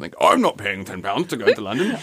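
put-on London accent. Discussing the congestion charge, voicing a driver refusing to pay, london accent impression. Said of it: "how good a London person you can do".

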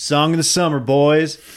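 put-on cocky voice. Retelling how a guy cranked the music and looked back at his friends, imitating a cocky voice. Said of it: "in the most cocky voice ever".

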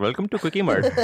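high, cartoonish character voice. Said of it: "How about like Abu from Simpsons?".

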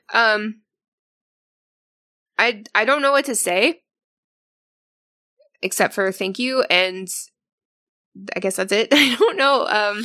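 tearful voice, crying while speaking. Thanking the others while everyone is crying, crying while talking. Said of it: "but I'm also crying".

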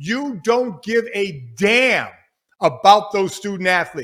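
very slow, deliberate, each word drawn out and spaced. Addressing university presidents directly, said really slow. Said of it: "Let me really say that slow".

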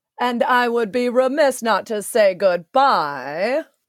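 slow, deliberate character voice. Asked to say goodbye on the podcast as Moira, speaking in Moira's voice. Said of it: "you saying goodbye as Moira".

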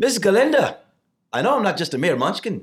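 put-on very high, loud, stage-projected Irish accent. Performer reads a short scene to miss galinda as asked, projected irish accent. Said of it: "Irish and really project".

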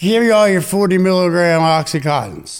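acted, slurred, drugged-sounding speech with words running together. Retelling going up to the counter while high: imitating slurred speech. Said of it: "I'm slurring".

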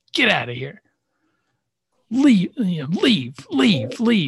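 mock cross child voice, very high and angry. Retelling being kicked out of bed by a son: imitating an angry son. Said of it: "He was pissed off".

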